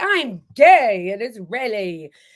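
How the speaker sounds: put-on old-fashioned British villain accent, slow and drawn out. Imitate a british guy you cannot stand, in a drawn-out old-fashioned bad guy accent. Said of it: "has like an old-fashioned bad guy accent".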